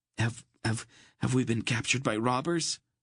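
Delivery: trembling, stumbling, frightened, quavering voice. A narrator reads a boy's stammered question to a wolf, in a quavering voice. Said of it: "Geryon asked in a quavering voice".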